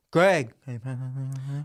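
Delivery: mock mumbled, unclear delivery. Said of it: "people that mumble all the time".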